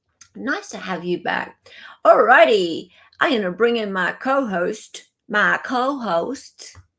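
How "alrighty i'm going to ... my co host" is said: deliberate, put-on American accent. Host bringing in the co-host, saying it in a put-on American accent. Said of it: "like my American accent".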